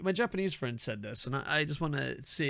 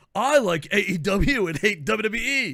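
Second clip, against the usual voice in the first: very loud, high, put-on American accent; 5 semitones higher, 9 dB louder than usual. Retelling a friend's bit where he plays an American: Japanese friend's American impression. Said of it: "an impersonation of a Japanese person impersonating an American person".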